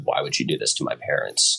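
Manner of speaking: ordinary delivery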